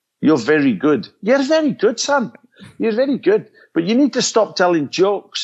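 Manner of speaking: best-attempt put-on Scottish accent. Retelling what a fellow performer told you after your show, in his best Scots accent. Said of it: "in his best Scots accent".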